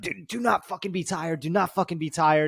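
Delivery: mock coach's yell, pulled back and muted. Retelling a coach yelling at a tired fighter: imitating a coach screaming. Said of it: "screaming at him".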